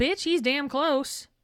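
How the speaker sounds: full-on scolding, telling-off voice. Retelling Molly's reply to Sirius about Harry: Molly's mom voice. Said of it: "Molly brings out the mom voice and says".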